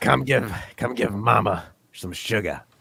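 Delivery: put-on old chain-smoking woman voice. Playing along after a joke about a hoarse voice, as an old chain-smoking woman. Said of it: "sound like a eighty year old woman that smokes".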